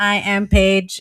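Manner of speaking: monotone, machine-like robot voice. Told they can't sound robotic, trying again: robotic monotone. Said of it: "it's monotone".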